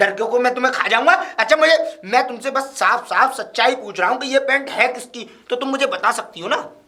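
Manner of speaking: high-pitched, loud yelling. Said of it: "मुझ पे क्यों चिल्ला रहे हैं आप".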